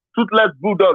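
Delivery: ordinary delivery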